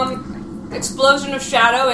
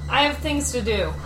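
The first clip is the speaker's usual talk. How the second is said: ordinary delivery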